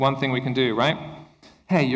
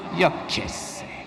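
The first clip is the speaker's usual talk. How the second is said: mock-disdainful teenage voice; 3 semitones higher than usual. Speaker showing how teenagers answer in Spanish, imitating disdainful teenager. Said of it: "With so much disdain".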